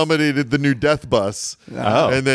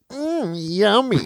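put-on high little old woman's voice; 6 semitones higher than usual. Describing the studio logo, then saying its line: old lady voice. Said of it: "the voice of an old lady goes".

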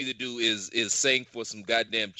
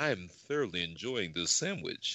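stiff, prim, polite commercial voice, low and soft; 6 semitones lower, 7 dB quieter than usual.

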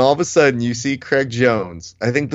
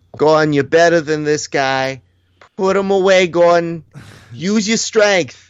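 acted-out, pitched-up, hollered, yelling cheer; 6 semitones higher than usual. Retelling what Gordon's dad was yelling during the show: imitating Gordon's dad yelling. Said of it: "Gordon's dad was yelling out".

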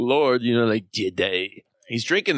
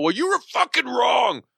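put-on shout, very high-pitched; 12 semitones higher than usual. Pretending to yell at everybody who expected it: mock yell. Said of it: "Everybody thought I was gonna yell".

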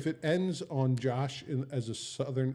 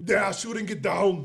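yelled put-on voice, pitched much higher; 6 semitones higher, 6 dB louder than usual. Asked to let them hear it, back up from the microphone for a yelled Arnold Schwarzenegger impression. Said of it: "I have to yell when I".

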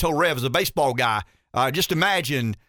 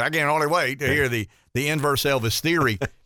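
plain

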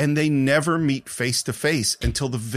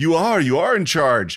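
put-on excited voice, higher pitch; 4 semitones higher, 4 dB louder than usual. Retelling how an excited Arnold Schwarzenegger reacted while watching: imitating excited Arnold Schwarzenegger. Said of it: "that's exactly how excited he is".

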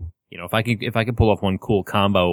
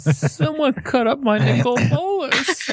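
tiny, very high, swooping, sad little voice. Recalling a moment at the table, imitating the listener's saddest little voice. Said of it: "you just had the saddest little voice".

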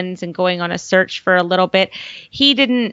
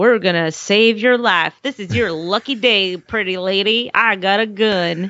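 talking like a cowboy. Retelling how Sawyer acted in an episode: cowboy Sawyer impression. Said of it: "He was just being such a cowboy, trying to be like".

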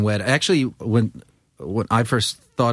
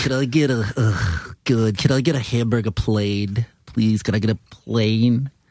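put-on Queens, New York accent. Acting out a man's repeated request during a story, in his Queens accent. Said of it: "With his Queens accent".

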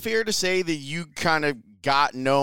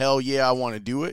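normal talking voice

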